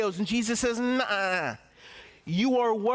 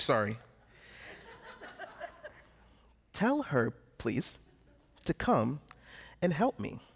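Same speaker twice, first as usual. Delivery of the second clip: hushed, slow, reined-in, lowered voice; 6 semitones lower, 6 dB quieter than usual. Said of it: "then she had to lower it again".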